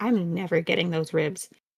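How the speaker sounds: low, faint, grumbled mutter under the breath. A character looks toward the Kaiju and sighs, muttered under her breath. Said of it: "you hear faintly under her breath".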